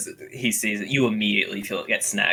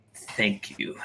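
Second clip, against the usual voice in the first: grudging tone, quieter; 6 dB quieter than usual. Voicing a goblin thanking for rations: begrudging tone. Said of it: "he says with, like, a bit of a begrudging tone".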